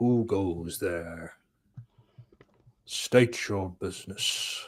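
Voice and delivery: spooky, menacing, scary voice. Retelling a scene where a giant green head challenges visitors: put-on scary voice. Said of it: "Scary voice".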